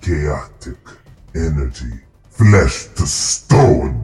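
strange, deep gargling voice. A game master voices a woman casting a spell, in a strange deep gargle. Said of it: "this strange, deep gargle of a sound as she says".

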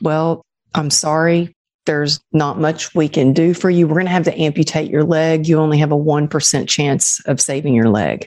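ordinary talk, nothing marked

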